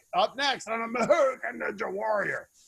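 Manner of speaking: raspy, gravelly, creaky announcer voice, voice worn out. Recalling a shoot where his voice was gone, the speaker redoes the line gravelly. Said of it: "I was really gravelly".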